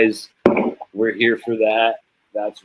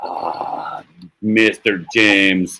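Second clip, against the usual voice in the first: slow, drawn-out, put-on Somali accent. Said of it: "they have a crazy accent".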